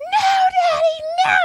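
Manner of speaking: mock shrieking, very high, shrill screaming. Retelling a phone call, acting out a girl answering her dad, imitating a girl screaming. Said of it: "And she's screaming".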